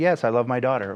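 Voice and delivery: ordinary delivery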